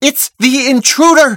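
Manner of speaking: high, shouted call, yelling out. Narrator reads a character raising the alarm about an intruder, shouting. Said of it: "shouts the voice of the real Murnith".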